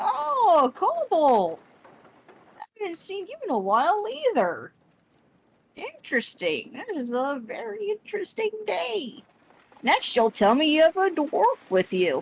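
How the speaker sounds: put-on hunched, high, swooping old troll woman voice. Game master voicing the old troll lady greeting a party member, old troll lady voice. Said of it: "she's old lady troll, / yeah, she's st- like she is hunched over, but she's still like towering now at like eight, at least eight feet, if not a little taller. / uh, the troll lady, / she's old lady t".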